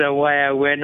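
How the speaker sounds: ordinary talk, nothing marked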